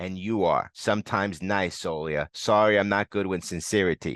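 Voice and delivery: ordinary talk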